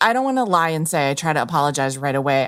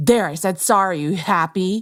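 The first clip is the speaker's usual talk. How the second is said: sulky, resentful, angry, petulant grudging tone; 3 semitones higher than usual. Showing an apology said just to get it over with: mock angry petulant apology. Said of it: "an angry tone to it or an embarrassed tone".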